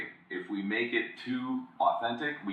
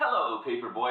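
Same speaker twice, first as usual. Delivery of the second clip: acted-out unshakably cheery, chipper, upbeat tone; 4 semitones higher than usual. Describing a banned ad, quoting the man's greeting, mock super-cheerful. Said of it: "he's just so positive".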